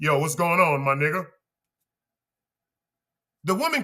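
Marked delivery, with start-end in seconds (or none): 0.0-1.3 put-on man's voice, much lower. Speaker showing how hormones change the voice, put-on masculine voice. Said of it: "change the tone of their voices".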